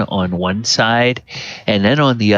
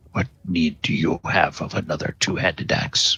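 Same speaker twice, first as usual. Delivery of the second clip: grumbling voice, lower and quieter; 5 semitones lower, 7 dB quieter than usual. Voicing a talking axe in a player's head: grumbling voice. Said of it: "you have kind of this grumbling voice in your head".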